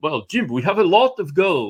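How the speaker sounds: put-on very reserved, polite, understated British accent. Retelling a client's reply to a consultant: imitating a reserved British person. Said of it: "very reserved British".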